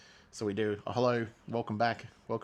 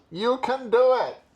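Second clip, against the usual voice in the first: booming, shrill, very loud, high, stretched-out holler; 14 semitones higher, 11 dB louder than usual. Cheering on viewers doing Dry July, in a Rob Schneider impression. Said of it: "the best Rob Schneider impression I can give you".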